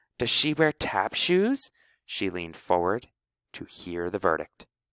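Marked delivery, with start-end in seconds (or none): 0.2-1.7 eager voice full of hope, pitched up. Honey asks Finesse about the Moon Pie Fairy, hopeful. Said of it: "spoke with great hope in her voice".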